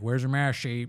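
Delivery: mock angry scolding voice. Acting the clip's line as if said to Joanna: imitating someone angry. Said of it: "he's mad at somebody".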